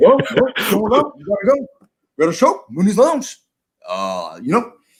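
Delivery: high, swooping buddy voice, group version. Retelling how a friend announced a booking: Chad impression. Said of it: "the same impersonation for Chad".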